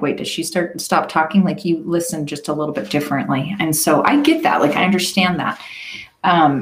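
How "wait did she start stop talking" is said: plain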